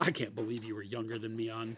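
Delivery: put-on grumbling. Teasing another speaker by imitating his complaint: imitating someone grumbling. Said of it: "He's just grumbling".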